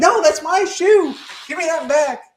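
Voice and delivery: very high, slow, protesting shout. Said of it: "the other person going".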